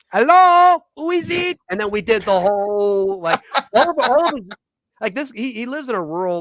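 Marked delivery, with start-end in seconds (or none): 0.2-1.6 loud, very high, put-on French accent. Telling of his brother leaning out a window to greet him: Monty Python French knight voice. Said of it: "as the the French knight in Monty Python the Holy Grail leans out and".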